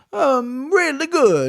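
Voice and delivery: put-on Italian accent, very slow, drawn-out, swooping. Closing a show with a line about a card, in an Italian accent. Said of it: "That's my Italian accent".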